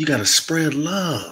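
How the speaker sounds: sultry, sexy, sensual, seductive tone. Repeating a message to listeners, sexy and sensual. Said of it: "I'm going to say this real sexy and sensual".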